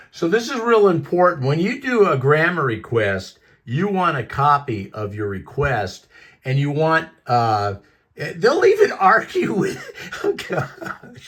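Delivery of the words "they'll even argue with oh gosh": words breaking into laughter, very high and slow. Explaining how to file a grandma request, laughing while talking. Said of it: "I'm sorry, I'm laughing".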